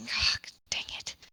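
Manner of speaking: muttered, whispered under the breath. Voicing a character who curses under her breath after a failed lift: cursing under her breath.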